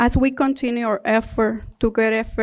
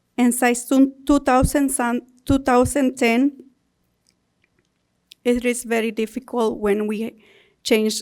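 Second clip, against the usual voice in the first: nervous, halting, stumbling delivery. Speaking to a meeting about a work contract, nervous. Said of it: "I get nervous".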